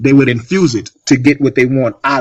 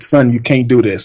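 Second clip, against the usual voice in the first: put-on pleading, begging tone. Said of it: "I pleaded with him and I begged him".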